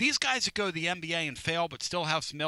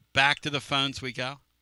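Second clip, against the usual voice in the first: ordinary talk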